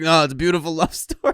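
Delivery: put-on thick New York accent. Retelling an uncle's reply about rom-coms: Uncle Ryan's heavy New York accent. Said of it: "who has the heaviest New York accent you'll ever hear".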